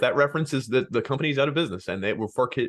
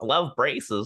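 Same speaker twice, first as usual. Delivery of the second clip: put-on young kid voice, like a little child. Podcast host explaining their bit of posing as fourteen-year-olds: talking like a young kid. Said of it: "we start talking young".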